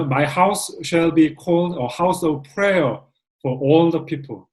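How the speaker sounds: very slow, word-by-word English reading.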